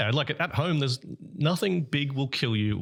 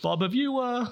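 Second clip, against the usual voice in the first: incredulous, in a much higher voice. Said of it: "You're like".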